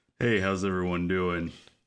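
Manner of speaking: very deep, low voice.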